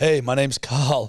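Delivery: put-on terrified voice with stutter. Mocking how a name sounds: imitating a stuttering, terrified voice. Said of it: "it just sounds like you're terrified".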